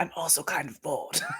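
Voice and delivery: soft, hushed, confiding whisper. Speaker adding an aside meant only for Red, whispering. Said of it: "I'm just gonna whisper this to Red".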